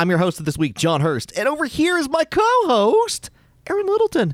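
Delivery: very high sine-wave voice, swooping up then dropping. Host introducing himself and his co-host on the show, voice rising then dropping. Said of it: "Did your voice just drop there?".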